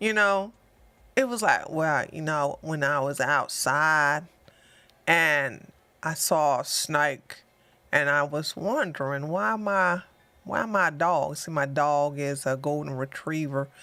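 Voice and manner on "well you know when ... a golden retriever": genuine slow, low, unhurried southern drawl. Imitating a man from a gun range who talked slowly: imitating a slow deep southern drawl. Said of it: "talked real slow and, and had a real deep southern, um, drawl".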